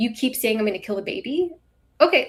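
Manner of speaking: scornful, sarcastic, mocking tone. Retelling replies to someone in a chat: imitating a mocking tone. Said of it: "me mocking him, saying".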